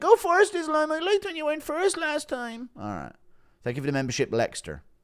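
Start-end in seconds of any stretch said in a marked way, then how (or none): 0.0-2.7 squeaky, very high put-on voice. During a fight with jabs and clashing heads, do an impression of Gary talking to Islam. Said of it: "Impression of Gary saying".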